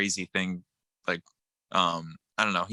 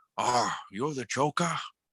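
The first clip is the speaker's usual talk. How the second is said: rusty, mob-boss style voice; 4 semitones higher than usual. Describing the actor who plays John Travolta's grandpa, in his rusty mob-boss voice. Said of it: "he's got that voice just like that".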